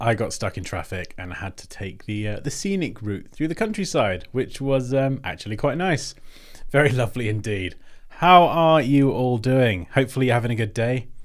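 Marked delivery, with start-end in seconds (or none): 8.1-11.1 level, flat, machine-like robotic monotone. Streamer greeting viewers after a late start: sounding like a robot. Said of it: "I sounded like a robot then".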